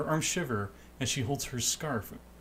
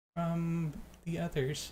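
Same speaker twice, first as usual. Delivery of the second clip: really soft, high little voice, hushed; 5 semitones higher than usual. Voicing a lost, scared girl thanking the group: really soft voice. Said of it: "her voice apparently is really soft".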